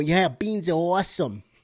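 bad, awful, fake put-on Boston accent. Imitating the kids quoting the joke line: bad boston accent. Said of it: "critique on that accent".

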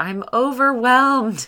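overwhelmed, high, loud, drawn-out yell.

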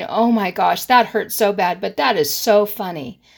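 plain

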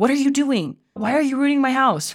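put-on loud, high, angry parent-style yell. Acting out a parent yelling at a son who splattered paint: acting out an angry yell. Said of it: "you felt angry and you yelled at him".

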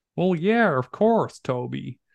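high put-on American accent, easy tone. Recounting a conversation, quoting a woman's reply in a put-on american accent. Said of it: "in her American voice".

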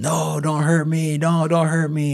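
shrill screaming repeated over and over. Retelling to a friend how a man on his couch begged not to be hurt, imitating someone screaming. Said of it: "while he's screaming this".

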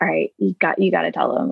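plain

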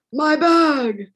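a man's high, loud, acted dramatic cry. Retelling a man crying out about his bag: imitating a dramatic cry. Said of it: "But I just".

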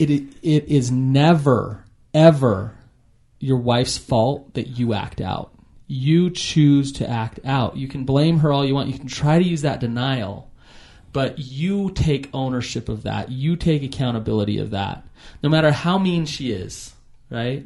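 plain

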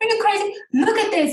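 put-on Arabic accent, voice pitched way up high.

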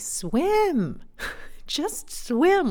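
very high, irritated, annoyed shout. Retelling how dad yelled back from the shore, retelling an annoyed yell. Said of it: "he yelled back at me".

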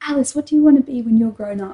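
put-on patronising, slightly condescending, teacherly talking-down tone. Retelling a librarian asking about future plans: imitating a condescending tone. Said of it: "slightly condescending way".

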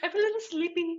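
put-on cute, squeaky voice.

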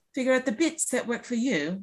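horrible fake English accent. Trying to speak in an English accent from now on: bad English accent. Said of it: "I'm going to try to say it in an English accent".

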